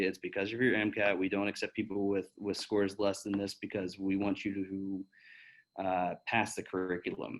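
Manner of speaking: normal talking voice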